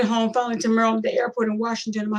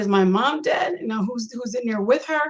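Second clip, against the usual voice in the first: usual speaking voice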